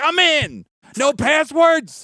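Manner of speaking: mock scream, very slow and stretched out. Retelling how the speaker reacted to a link with no passwords: imitating own past scream. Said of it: "I'm screaming".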